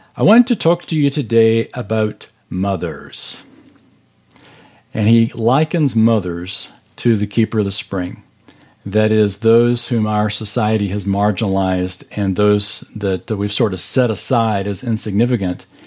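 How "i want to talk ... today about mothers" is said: put-on Scottish brogue, slower pace. Quoting Peter Marshall, in Peter Marshall's Scottish brogue. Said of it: "in his wonderful Scottish brogue".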